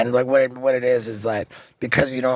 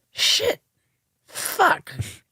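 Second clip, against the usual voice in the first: strained, hurting laugh. Retelling Mom's reaction to a knuckle tattoo: imitating Mom's pained giggle. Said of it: "this, like, pained, like, giggle".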